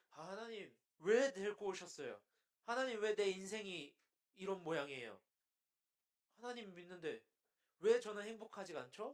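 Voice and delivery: loud, whiny, complaining voice, pouring out.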